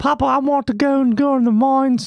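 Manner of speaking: put-on Australian accent. Playing a boy speaking to his papa, in a put-on Australian accent. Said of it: "I don't know why I'm Australian".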